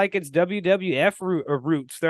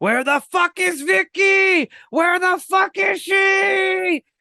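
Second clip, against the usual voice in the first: put-on, very high screaming yell, stretched out; 13 semitones higher, 3 dB louder than usual. Retelling how he screamed from the ladder when she missed her cue, imitating someone screaming. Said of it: "like screaming".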